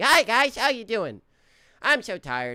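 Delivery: very high, booming, swooping, drawn-out sing-song voice. Asked to do it, the speaker greets the guys in the Riggy voice. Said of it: "can you do the Riggy voice?".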